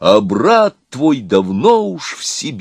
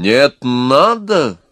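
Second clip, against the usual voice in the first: raised voice, drawn out, pushing back hard. The elegant devil overrules the maestro's objection: raising his voice. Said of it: "повысил голос изящный черт".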